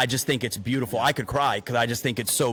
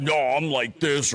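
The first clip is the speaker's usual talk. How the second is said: slow, deliberate, put-on burly big-man voice. Imitating someone on the fence about therapy: put-on burly guy accent. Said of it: "I don't know why I'm making that accent or whatnot or that tone".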